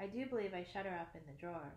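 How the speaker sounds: plain reading voice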